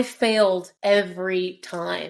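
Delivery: punctuated stress, failed, every, time each hit hard. Retelling a character's line on the staircase: imitating punctuated stress on FAILED EVERY TIME. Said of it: "It was the punctuated on, like, the failed every time".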